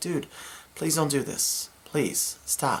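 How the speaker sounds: very soft, hushed, pleading whisper. Retelling calming down a drunk man held on the ground: retelling soft-spoken plea. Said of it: "tell him in a soft-spoken word".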